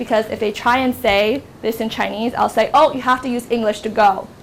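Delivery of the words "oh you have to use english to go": usual speaking voice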